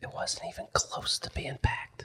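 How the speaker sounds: soft, slow whisper. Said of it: "I'm gonna whisper in the casket".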